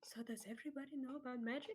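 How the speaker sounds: soft, hushed half-whisper with barely any voice. Voicing a character speaking to a player: half-whispering. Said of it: "Alouette whispers to you".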